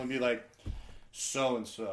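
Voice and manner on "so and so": dull, deliberately unfun, low, flat and joyless. Recalling saying the line low and deliberately unfun. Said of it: "I'd like lower my voice and say it as unfun as possible".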